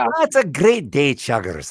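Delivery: put-on cheery Scottish accent. Like a voice actor recalling the original cheerful train character, rolling his words in a broad, warm scottish lilt. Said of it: "He kind of talk like that".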